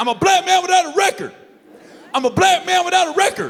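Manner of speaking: very loud, very high, shrill, furious shouting. Officer retelling a pulled-over driver yelling at him, retelling an angry yell. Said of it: "the dude immediately starts yelling at me".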